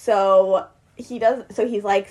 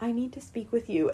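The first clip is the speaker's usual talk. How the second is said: very soft voice, much quieter; 9 dB quieter than usual. Speaker retells a man walking up to the table, in a really soft voice. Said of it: "in a really soft voice".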